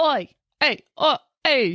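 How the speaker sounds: put-on tough Philadelphia accent. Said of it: "confused with Rocky there for a second".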